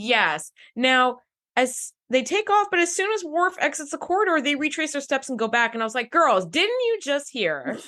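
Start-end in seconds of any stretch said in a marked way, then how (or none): 6.1-7.8 stern, swooping, scolding classroom teacher voice. Retelling calling to the girls who came back, in a teacher voice. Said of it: "That was my teacher voice".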